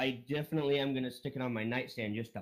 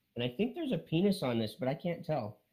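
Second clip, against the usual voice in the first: ordinary talk, nothing marked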